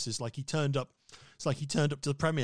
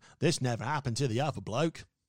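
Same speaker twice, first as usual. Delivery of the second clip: put-on Australian accent. Quoting a Bond line in an Australian accent. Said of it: "just 'cause he's Australian".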